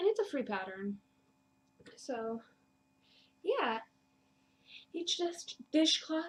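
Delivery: breathless, winded talk, short of breath. Pregnant podcaster describing a free dishcloth pattern, out of breath. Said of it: "Sorry, again, out of breath".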